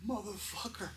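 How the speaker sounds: shrill, very high, furious, enraged outburst. Telling a story, the speaker acts out a man cursing at his crew, mock-angry outburst. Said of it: "because he's so mad at his crew".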